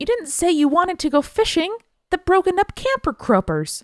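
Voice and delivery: upset, very high-pitched complaining tone. Reading out a list of lines, the speaker does the last one in an upset tone. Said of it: "in an upset tone".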